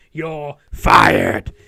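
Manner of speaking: very loud, rough, booming, gravelly barking voice. Doing a better second impression of someone firing a manager: impression of a boss firing someone. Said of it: "I can do a probably better one".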